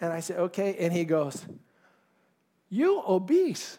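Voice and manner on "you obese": put-on high-pitched voice with a Korean accent. Speaker retells what the trainer told him after measuring him, imitating the trainer's accent. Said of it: "I'll try his accent".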